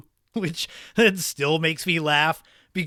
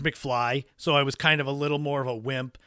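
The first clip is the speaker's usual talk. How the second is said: usual speaking voice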